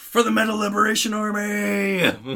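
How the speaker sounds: mock very high, very slow, drawn-out war cry. Retelling what a streaker yells out while being taken down: imitating someone yelling. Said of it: "he just yells out".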